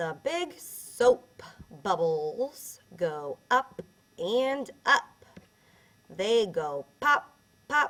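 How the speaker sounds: expressive storybook reading. Reading a funny-looking picture book aloud, read with more expression. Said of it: "I read that with a little bit more expression that time".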